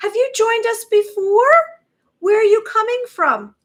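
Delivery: voice shot way up, very high and very loud. Greeting a viewer who has just joined: very high-pitched voice. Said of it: "my voice just went very high".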